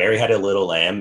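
normal talking voice

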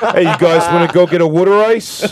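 put-on loud, high, dopey-sounding South Jersey accent. After a host asks for a guy with that accent, a guest demonstrates: dumb South Jersey accent. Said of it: "South Jersey dum-dum accent".

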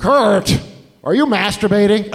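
high, loud, slow, deliberate, drawn-out calling voice. Retelling how his mom banged on his locked door: imitating his mom. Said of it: "She went".

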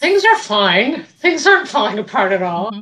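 dry, mocking sarcasm with swooping pitch. Answering that God is near when things fall apart: sarcastic. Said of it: "It's a lot of sarcasm".

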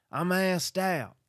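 very high, very loud holler. Acting out what someone over there is saying, slipping into an Ernest voice. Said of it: "my impression is going into Ernest".

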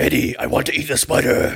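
creature-like monster voice. Mocking an imagined Venom versus Spider-Man movie, Venom voice. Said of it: "the Venom voice".

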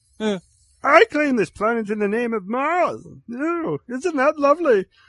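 very high, very loud cartoon space-alien voice. Discussing the sources of Star Wars, the speaker does a Marvin the Martian voice. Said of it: "You sound less like Marvin the Martian".

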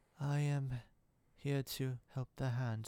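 drawn-out, measured, deliberate, really slow delivery. Fan describing how a show's actress first talked, imitating Elektra's slow speech. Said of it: "like really slow".

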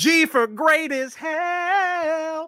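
very high, loud character voice, drawn-out "hell". Reviewing a movie with others, the speaker does a Jean-Ralphio impression. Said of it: "That was my best John Ralphio impression".

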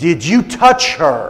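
booming, very loud, demanding shout. Retelling confronting a teacher who threatened his daughter: saying it real loud. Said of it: "and then I just said this real loud".

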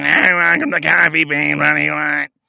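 put-on gravelly, raspy elderly woman voice. Retelling a coffee shop cashier's greeting, in a gravelly old lady voice. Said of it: "some gravelly old lady behind the counter".

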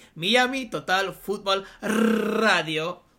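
loud Spanish accent with every R rolled. Host saying the show's name in Spanish for a guest, Spanish accent, rolled R's. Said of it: "With the R's rolled and everything".

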